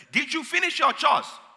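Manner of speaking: shrill, very loud, high put-on Nigerian accent. Retelling sneaking out to play, quoting a parent, imitating parent's nigerian accent. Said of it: "hence the accent".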